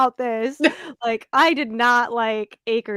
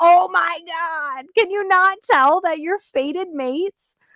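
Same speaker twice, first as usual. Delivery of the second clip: high-pitched, fed-up, exasperated yell; 6 semitones higher than usual. Retelling how readers reacted to the author: imitating screaming at someone. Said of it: "screaming at her".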